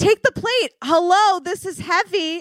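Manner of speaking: mock high scream. Retelling how a waitress screamed at the diner: imitating a waitress screaming. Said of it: "then she screams".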